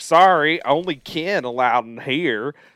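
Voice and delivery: loud, slow, very thick country Virginia drawl. Speaker retells what the nurse said when someone entered the room: imitating Alice's country Virginia accent. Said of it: "the most country Virginia accent of all time".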